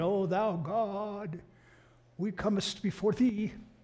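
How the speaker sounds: very slow, solemn, archaic prayer-like tone, "God" stretched out. Retelling how a grandfather prayed: imitating archaic King James prayer. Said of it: "he'd pray in the King James English".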